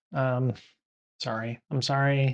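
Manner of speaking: plain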